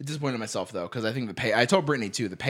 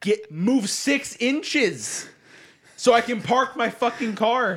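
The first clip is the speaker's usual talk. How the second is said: mock very high, dragged-out, drawn-out yelling; 11 semitones higher, 3 dB louder than usual. Retelling being stuck behind a car at a gate: retelling own yelling. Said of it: "I was yelling in my car".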